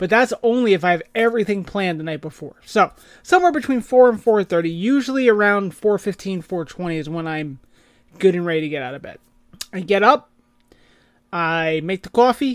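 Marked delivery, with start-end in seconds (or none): 11.3-12.6 thick put-on New Jersey accent. Describing their early morning routine, the speaker adds a put-on Jersey accent. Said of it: "I added the Jersey accent".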